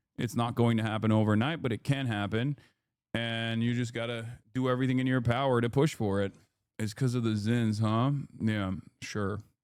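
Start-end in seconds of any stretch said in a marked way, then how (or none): 8.4-9.4 level, toneless, dead flat monotone. Answer the other person's question in the most monotone voice ever. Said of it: "He says in the most monotone voice ever".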